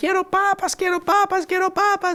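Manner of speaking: put-on shouting. Retelling being led home by the hand: imitating own childhood shouting. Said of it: "y gritaba".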